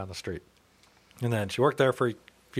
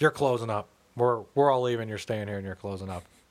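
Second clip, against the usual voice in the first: ordinary talk, nothing marked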